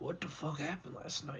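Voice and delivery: very quiet hushed whispered aside. Whispering in character to a companion while walking down a hallway: whispering. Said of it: "I wanna kinda whisper to him".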